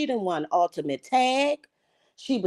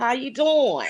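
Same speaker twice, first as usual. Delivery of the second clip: put-on country accent; 2 semitones higher than usual. Clowning around while greeting someone, in a put-on country accent. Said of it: "my country accent".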